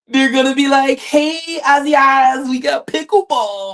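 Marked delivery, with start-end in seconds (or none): 1.0-3.7 slow, entitled drawling voice. Imagining people inviting Aziaz to pickleball: put-on Karen voice. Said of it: "I had to throw in my Karen voice".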